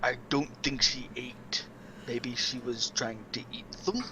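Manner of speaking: hushed, soft, private in-character whisper. Leaning over to another character to share a suspicion: whispering in character. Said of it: "lean over to Zelene and whisper".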